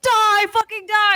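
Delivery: mock screaming, very high-pitched and shrill. Retelling running into a building shooting everybody, reenacting yelling at a man. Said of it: "I'm just like yelling at this man".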